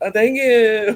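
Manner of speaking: shrill, very high, loud, oddball delivery. Retelling a wrestling segment, imitating Chad Gable's weird thank you. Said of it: "you say thank you weird".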